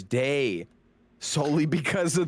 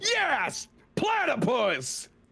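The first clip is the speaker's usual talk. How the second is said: very high-pitched, overexcited squealing outburst; 12 semitones higher than usual. Acting out Amir getting up over the platypus: overly excited. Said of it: "gets a little too s-, excited".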